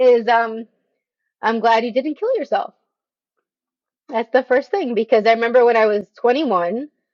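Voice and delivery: voice wet with tears, crying a little. Asked what advice they'd give their twenty-year-old self, the speaker cries a little. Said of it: "which is why I'm crying right now a little bit".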